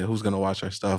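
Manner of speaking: ordinary talk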